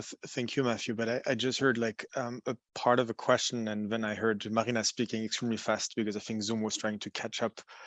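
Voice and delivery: very quiet speech. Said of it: "can you speak up a bit?".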